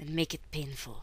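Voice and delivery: low, muttered aside. Retelling a character ordering an arrest: retelling a mutter. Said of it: "Phaedra mutters".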